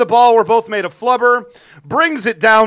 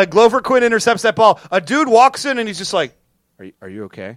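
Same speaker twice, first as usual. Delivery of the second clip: usual speaking voice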